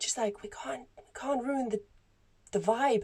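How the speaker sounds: hushed, high-pitched whisper. Retelling the people serving pints at a gig whispering back, imitating a whisper. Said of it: "And then they whispered back".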